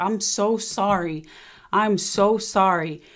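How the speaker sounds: slow, tearful, crying through repeated words. Retelling how a crying father apologized: imitating someone crying. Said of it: "he's crying".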